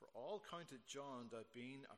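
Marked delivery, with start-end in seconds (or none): none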